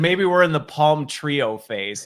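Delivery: ordinary talk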